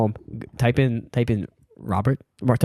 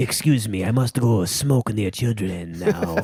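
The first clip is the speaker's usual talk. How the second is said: put-on French accent. Speaker acting out a Frenchman excusing himself and leaving, in a French accent. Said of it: "clearly French accent".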